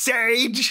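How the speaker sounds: very high, drawn-out froggy holler. Describing the listener's mom yelling at her dog; retelling a yell in Kermit voice. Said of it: "she just yells at him like".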